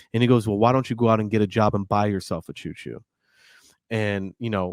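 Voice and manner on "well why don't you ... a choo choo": put-on cold, mean voice, pitched lower. Retelling a movie scene where the dad answers his son: imitating a mean, cold dad. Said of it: "just very mean and cold".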